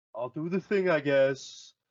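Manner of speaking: put-on low robot voice. Retelling a scene where R2-D2 strolls over to a locked door, in R2-D2 voice. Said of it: "like that R2 voice".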